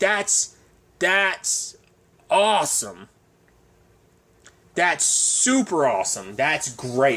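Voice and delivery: very slow, swooping, heavily laid-on sarcasm. Reacting to someone finding out they might be sick: super sarcastic. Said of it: "I'm being super sarcastic".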